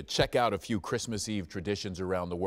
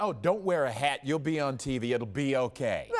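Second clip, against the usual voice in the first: usual speaking voice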